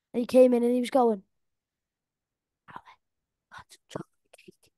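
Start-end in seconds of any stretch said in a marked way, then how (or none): 2.7-4.6 put-on very quiet, barely-there small boy's whisper. Retelling what a four-year-old said when he came in: imitating a child whispering. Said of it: "he was whispering dead, dead low".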